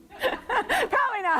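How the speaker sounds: laughing through the words, very high pitch. Asking listeners whether they heard the bass, laughing.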